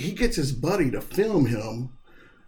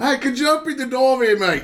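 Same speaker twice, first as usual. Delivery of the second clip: put-on called out high, Australian accent with Italian touch; 10 semitones higher, 6 dB louder than usual. Asked how the Wolfhound talks, voicing him with an Australian-Italian accent. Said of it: "Australian with a hint of Italian".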